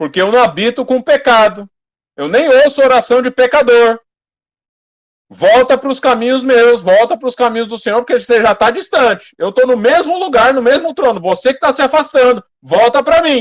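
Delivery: very loud, booming, thundering roar. Speaker voices the Lord addressing someone who is sinning, in a thunderous voice. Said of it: "vou levantar minha voz de trovão".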